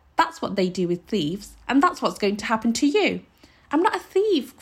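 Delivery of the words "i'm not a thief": very high, loud, cried-out voice. A boy called a thief protests to a woman, crying out. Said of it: "cried the boy, his lips trembling".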